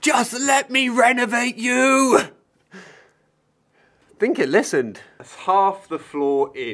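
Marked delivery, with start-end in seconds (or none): 0.0-2.2 shrill, very high top-of-the-lungs yell. Retelling shouting at a beam that wouldn't go in: retelling a shout at full voice. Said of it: "I just shouted at the top of my voice".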